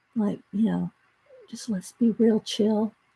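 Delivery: soft, very quiet, chill, relaxed voice.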